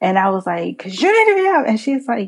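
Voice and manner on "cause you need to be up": put-on very high-pitched shouted yell. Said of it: "Why are you yelling at me?".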